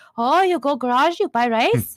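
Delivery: put-on broken English in a Korean accent. Imitating how grandmother understood English: Korean-accented English. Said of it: "if I pronounce it in the way she pronounces it".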